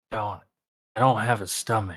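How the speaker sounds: whispered. Describing sliding a drink over to Cha, then leaning in to whisper. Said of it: "lean in and whisper".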